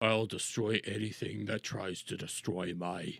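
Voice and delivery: put-on very low, very hushed, muttered old Australian voice. Mocking a fat old aussie's claim, imitating a fat old aussie. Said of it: "this fat old Aussie sitting there going like".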